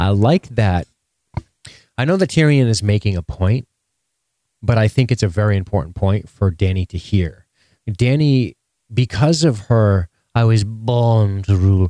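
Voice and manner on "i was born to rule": slow cartoon character voice, "born" drawn out. Quoting Dany's line, then noting she sounds like Stewie: Stewie voice. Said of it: "she sounds like Stewie".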